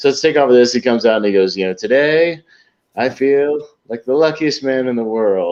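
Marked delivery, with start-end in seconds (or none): 1.7-5.5 heavily sarcastic, grand announcer-like delivery. Retelling a comedy sketch's speech: imitating Norm Macdonald's sarcastic delivery. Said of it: "the sarcastic delivery".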